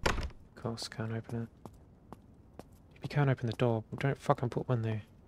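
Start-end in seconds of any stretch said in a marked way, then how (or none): 3.0-5.0 angry, irritated, fed-up complaining outburst. Complaining about a game door that cannot be opened: angry. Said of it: "Sorry, I'm getting angry".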